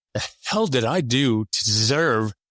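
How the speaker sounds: ordinary delivery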